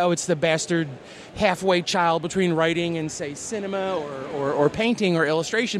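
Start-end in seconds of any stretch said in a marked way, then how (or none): none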